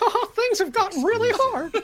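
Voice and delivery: very high, squeaky cartoon mouse voice. Mocking a dramatic trailer by imitating Mickey Mouse: Mickey Mouse voice. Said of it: "you got Mickey Mouse being like".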